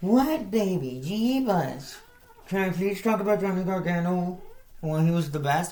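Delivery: high, pleading voice used for talking to pets.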